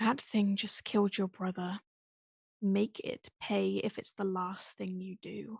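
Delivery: quiet, secretive half-whisper. Voicing Silk speaking to the children so Amethyst won't hear: half-whispering to the children. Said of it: "almost, like, whispering".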